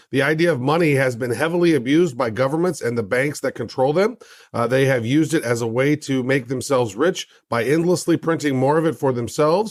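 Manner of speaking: ordinary talk, nothing marked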